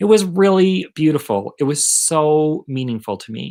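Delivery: choked-up voice, speech choked with feeling. Recalling guests passing around the wedding rings, getting choked up. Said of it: "I'm getting choked up".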